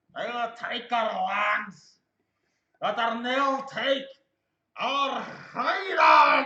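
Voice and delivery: put-on very loud, high statesman voice, British accent poorly held, slipping. Try to quote Winston Churchill without quite getting the accent, in a bad Winston Churchill impression. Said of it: "He's trying to quote Winston Churchill, but I can't quite get the accent".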